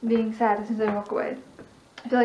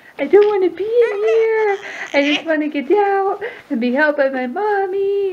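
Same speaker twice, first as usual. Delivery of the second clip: put-on very high, slow, drawn-out, cross baby voice; 9 semitones higher, 7 dB louder than usual. Speaking for a baby who wants out: voicing the baby as angry. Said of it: "so angry".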